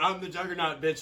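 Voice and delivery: ordinary talk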